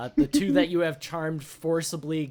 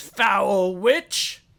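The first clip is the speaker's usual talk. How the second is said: loud, pitched-up, spat-out hostile snarl; 5 semitones higher, 7 dB louder than usual. Voicing a sailor glaring at a witch: NPC snarling an insult. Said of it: "glares at you and says".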